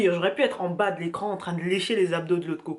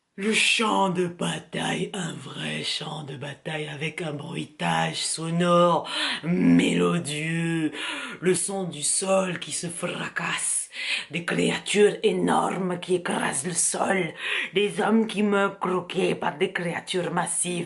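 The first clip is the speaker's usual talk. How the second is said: put-on Russian-accented voice. Talking to an audience about a film, put-on Russian accent. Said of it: "Pourquoi je fais un accent russe?".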